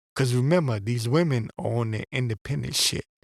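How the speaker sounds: usual speaking voice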